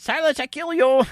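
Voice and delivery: very high, squeezed-up puppet character voice. Quoting a comedian's act: Achmed impression. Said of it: "Ahmed was his main guy".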